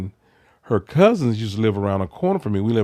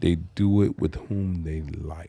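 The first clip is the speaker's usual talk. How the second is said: slower and quieter; 4 semitones lower, 6 dB quieter than usual. Asked by the co-host to repeat a statement more slowly, saying it slower. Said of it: "You have to say that again slower".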